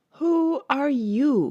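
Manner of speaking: languid, sleepy, lazy voice. Narrating the story, voicing the Caterpillar addressing Alice: languid, sleepy Caterpillar voice. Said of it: "addressed her in a languid, sleepy voice".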